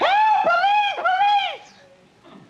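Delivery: desperate, very high, loud shrieking scream. Showing how to scream while grabbed in an elevator: screaming for help. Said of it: "you had to scream".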